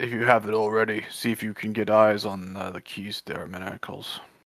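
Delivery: hushed, secretive half-whisper in character. Half-whispering to Fizz in character about getting eyes on keys: half-whispering in character. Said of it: "I'm gonna whisper to Fizz".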